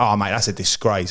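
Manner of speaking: ordinary talk, nothing marked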